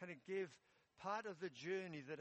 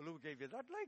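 put-on Welsh Geordie accent. Retelling what a man said as he turned to walk away, in a Welsh Geordie accent. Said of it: "a Welsh Geordie accent".

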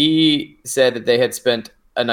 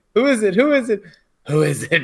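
very high, excited, eager, acted-out changed voice; 11 semitones higher than usual. Retelling how a woman's voice changed as she asked who it was: imitating her changed, eager voice. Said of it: "her voice, like, changed".

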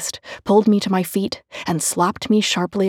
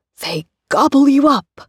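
loud, high-pitched monster-voice yell; 7 semitones higher, 7 dB louder than usual. Mama tickles her child during a monster game, yelling in a monstrous voice. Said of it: "she yelled in a monstrous voice".

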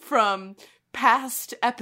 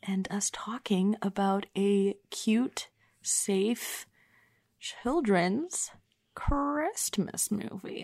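hushed, very slow, quiet murmur; 2 semitones lower, 4 dB quieter than usual. Recording an intro while a roommate may be sleeping, keeping it quiet. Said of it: "I do not want to disturb my roommate".

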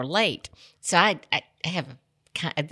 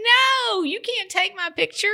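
put-on little girl screaming, very high and drawn out. Retelling a little girl refusing to have her picture taken: imitating a child screaming.

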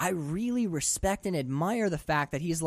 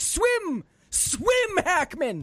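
shrill, high-pitched screaming; 12 semitones higher, 4 dB louder than usual. Imitating a viewer on the couch, screaming at the tv. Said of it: "screaming at your television like".

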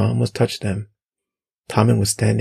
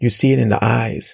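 plain reading voice

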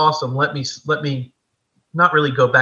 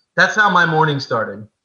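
usual speaking voice

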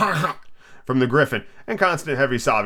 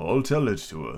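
deep, hollow, very low tone; 8 semitones lower, 6 dB quieter than usual. Reading Alice's story, the Mock Turtle answers the Griffin in a deep, hollow tone. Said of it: "said the Mock Turtle in a deep, hollow tone".

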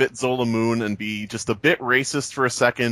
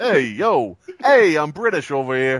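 put-on Boston accent, sing-song and swooping; 3 semitones higher, 4 dB louder than usual. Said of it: "Was that a Boston accent?".

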